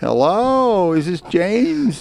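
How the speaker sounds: way-up high phone voice jumping up the octaves. Showing how their voice rises when answering the phone, voice going way up. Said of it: "your voice goes up like all the octaves".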